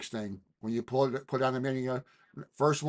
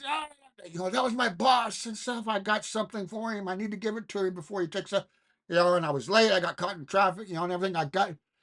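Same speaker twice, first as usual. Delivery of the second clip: mock-angry man voice, much higher pitch; 7 semitones higher than usual. Retelling a man stopped out on the airport tarmac; imitating an angry man. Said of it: "he's all pissed off".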